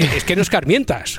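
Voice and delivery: plain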